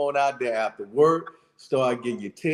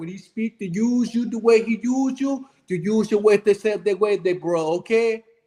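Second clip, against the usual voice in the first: put-on Jamaican accent, higher; 7 semitones higher than usual. Answering why he smiled by slipping into a put-on Jamaican voice. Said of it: "I wanted to speak into my Jamaican voice".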